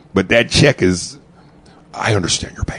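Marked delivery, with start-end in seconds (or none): 1.9-2.8 imitated breathy, whispery, soft family-movie-style voice. Imitating Cedric's commercial line again: imitating Cedric's Disney voice. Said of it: "it's his Disney voice".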